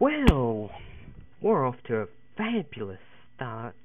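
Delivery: put-on affected, sing-song voice.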